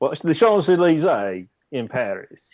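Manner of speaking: loose, vague Australian accent, high and loud. Correcting a remark mid-description, in a kind of Australian accent. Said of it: "It was kind of Australian".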